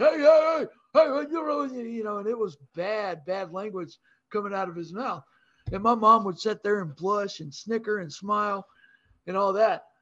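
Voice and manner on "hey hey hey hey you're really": loud, big, booming, bellowing shout. Imitating a man using bad language in front of the speaker's mom, big booming voice. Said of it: "in that big booming voice".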